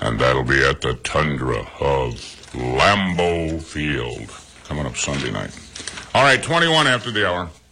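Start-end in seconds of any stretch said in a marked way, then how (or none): 0.0-5.6 put-on big, deep, booming voice like old sports film narrator. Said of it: "that big, deep voice and call it the Tundra".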